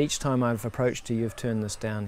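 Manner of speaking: ordinary talk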